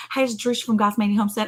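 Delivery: fast, rattled-off, rushed, words blurred. Recalling how Jerusha says her name when she opens up, imitating Jerusha's rushed intro. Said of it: "She says it so fast".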